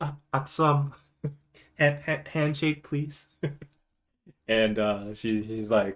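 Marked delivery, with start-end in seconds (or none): 0.0-3.3 very quiet, hushed voice. Retelling a woman on national TV asking for a handshake, very quiet. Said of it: "she says very quietly".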